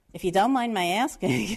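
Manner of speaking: put-on loud, thick, laid-on New York accent. Retelling a woman's question while renting a spring apartment, in a heavy New York accent. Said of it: "just a very heavy New York accent".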